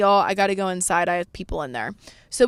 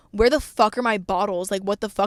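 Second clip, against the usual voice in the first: mock spoiled diva, bratty, demanding outburst; 2 semitones higher than usual. Telling the story, she acts out a complaint she insists she never made: mock-bratty demanding. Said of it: "not in a bratty way".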